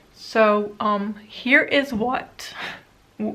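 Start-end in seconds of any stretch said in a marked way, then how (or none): 1.1-3.4 slow voice, breaking mid-phrase. Showing which eyeshadow singles are left, voice cracking. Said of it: "my voice is cracking".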